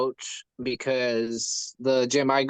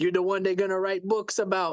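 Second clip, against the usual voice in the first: put-on Jamaican accent, big man's voice; 6 semitones higher than usual. Quoting one of a big Jamaican guy's phrases, imitating Jamaican accent. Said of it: "He's this big Jamaican guy, and he's like".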